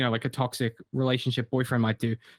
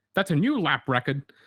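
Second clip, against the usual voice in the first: retro video-game cartridge announcer voice. Recalling what he once said, in a game cartridge voice: Nintendo cartridge voice. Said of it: "in the Nintendo cartridge voice".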